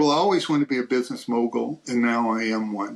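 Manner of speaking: plain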